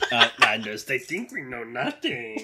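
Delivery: fake deep alien voice. Speaker quoting a character while watching a scene with a friend, Watto voice. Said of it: "That's how he talks, right?".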